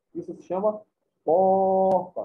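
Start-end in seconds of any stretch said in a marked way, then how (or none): 1.2-2.2 'porta' with first syllable 'pó' drawn out. Teaching the stressed syllable in Portuguese: lengthened pó in porta. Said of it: "Quem que eu falei por mais tempo? O pó".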